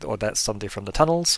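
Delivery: ordinary talk, nothing marked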